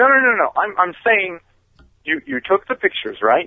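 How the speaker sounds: offended, irritated tone.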